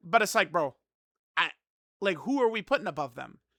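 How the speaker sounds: normal talking voice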